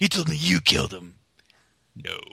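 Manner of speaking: rough, creaky, rasping voice. Quoting a movie scene in an attempt at Mark Hamill's voice. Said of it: "That did not sound like Mark Hamill".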